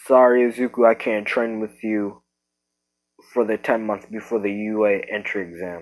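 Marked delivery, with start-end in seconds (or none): none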